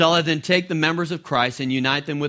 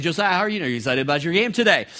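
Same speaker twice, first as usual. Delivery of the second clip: very rapid, fast-talking voice at a faster pace. Speaker retells how they greeted josiah before his game, in a very rapid voice. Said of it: "talking in a very rapid voice".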